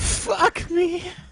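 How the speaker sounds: put-on video-game voice, very high and loud. Told by a friend to redo the line, now in a video game character voice. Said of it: "Do a game voice on it".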